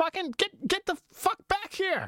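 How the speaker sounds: put-on high yelling. Comparing comedians' styles, one launches into a Bill Burr yelling impression. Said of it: "he yells a lot".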